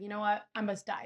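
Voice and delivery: ordinary talk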